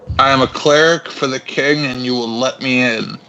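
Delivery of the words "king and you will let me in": ordinary talk, nothing marked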